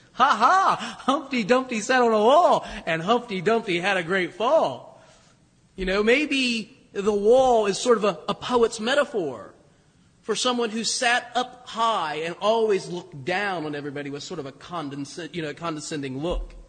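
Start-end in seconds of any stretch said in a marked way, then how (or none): 0.2-5.0 gleeful, jeering, taunting sing-song. Showing how somebody might tell it with glee: mock-gleeful taunting telling. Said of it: "with a little bit of glee in their voice".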